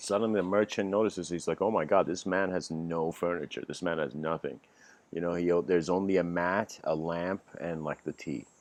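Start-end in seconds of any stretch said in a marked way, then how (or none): none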